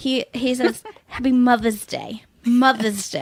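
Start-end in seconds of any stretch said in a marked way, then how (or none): 1.1-3.2 put-on New York accent. Quoting Mark's Mother's Day greeting, the speaker imitates Mark's New York accent. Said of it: "never sounds like he's from New York, except for when he says".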